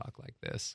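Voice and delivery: hushed, very soft, breathy whispered quiet voice. Demonstrating how people usually talk to each other, soft inside voice. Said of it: "we speak like we're using inside voices".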